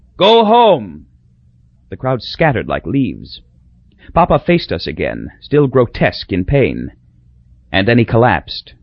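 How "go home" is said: very high, choked-off, strangled cry. In pain, Papa finally gets words out to the crowd; strangled cry. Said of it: "he cried, strangling".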